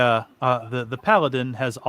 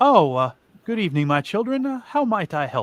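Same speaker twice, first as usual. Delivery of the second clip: genial, friendly, affable, pitched-up voice; 6 semitones higher than usual. Game master voicing a father greeting the party, affable and friendly. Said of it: "he smiles at you affably and says".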